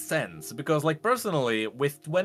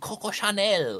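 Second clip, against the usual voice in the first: high, put-on French accent; 5 semitones higher than usual. Describing a classy League champion to another speaker, in a good French accent. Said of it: "That's a good French accent".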